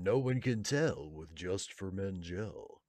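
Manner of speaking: slow put-on TV ad announcer voice, a bit congested. Guessing a line from a hair gel commercial, put-on commercial announcer voice. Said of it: "like my announcer voice?".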